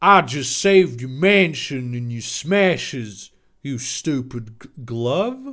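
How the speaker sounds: put-on very low-pitched, deep South Carolina southern accent. Reading his own story aloud, voicing Master Han after being untied, southern accent. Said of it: "I'm giving a southern accent".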